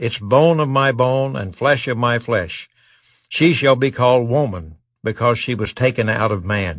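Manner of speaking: usual speaking voice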